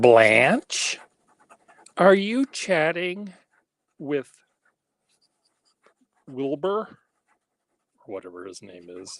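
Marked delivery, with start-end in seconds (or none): 0.0-6.9 mock big, nasty, loud, screeching high voice. Imitating the mother of the bride calling Blanche, big loud screechy voice. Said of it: "Big, loud, nasty, screechy voice".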